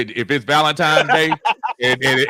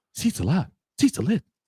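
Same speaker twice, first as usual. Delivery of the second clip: hushed, breathy, whispered put-on voice; 3 semitones higher, 6 dB quieter than usual. Quoting what Will says, done in a Jack Spade voice. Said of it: "in my Jack Spade voice".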